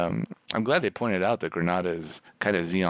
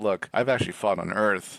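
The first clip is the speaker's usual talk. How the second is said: ordinary talk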